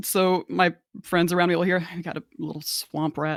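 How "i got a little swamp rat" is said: muttered under breath, quieter and lower. A player's character speaks so only nearby friends hear, muttered under breath. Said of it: "I kind of say under my breath".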